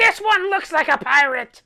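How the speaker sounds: high, loud voice of a tiny pixie creature. Voicing a pixie flying up to a player: tiny pixie voice. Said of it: "flies right up to Throck and says".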